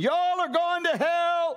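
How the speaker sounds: very high, stretched-out, drawn-out ranting scream. Retelling a street preacher on a milk carton: imitating someone screaming. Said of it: "he's screaming".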